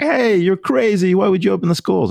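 shrill, very high, angry yelling. Retelling one side attacking on Twitter about reopening schools: imitating someone yelling. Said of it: "yelling at me".

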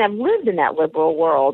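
ordinary talk, nothing marked

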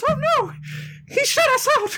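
voice pitched way up, cartoon-style. Voicing Mickey Mouse, who finds the way shut by a mime's door: Mickey Mouse voice. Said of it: "Mickey jumps off the back of Johnny Five and goes".

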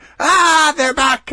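very high, shrill, very loud shrieking scream. Playing the neighbor who hears the leprechaun shouting, acting out screaming. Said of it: "I just start screaming".

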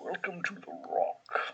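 put-on breathy, quiet Scottish accent. Naming the famous rock they are going to and urged to do the voice, Sean Connery accent. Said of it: "you have to do the Sean Connery accent".

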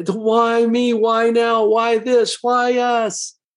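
whining tone. Illustrating the victim paradigm to listeners: whiny voice. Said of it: "It's usually said in a whiny voice too".

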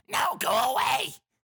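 very high, goblin-like creature voice. A voice answers a knock from inside something: goblin voice. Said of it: "It sounds just like a goblin".

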